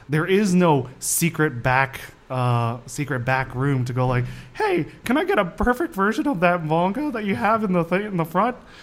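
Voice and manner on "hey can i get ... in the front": nerdy geek voice, higher and faster. Acting out a customer asking at a shop with no back room, Simpsons geek voice. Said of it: "it's a good impression of the geeks on The Simpsons".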